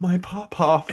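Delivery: play-acted very high, teary, tearful voice. Retelling the tearful answer in the car: imitating someone tearful. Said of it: "she's got tears in her eyes".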